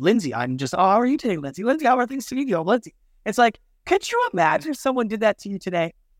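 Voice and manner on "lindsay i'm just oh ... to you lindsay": trained, polished salesperson patter. Imitating a trained salesperson who keeps repeating a client's name: imitating a salesperson. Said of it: "we used to train salespeople to use the, your client's name".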